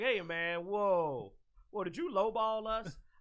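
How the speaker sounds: slow, aggrieved, ticked-off, confrontational tone. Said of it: "now I'm ticked".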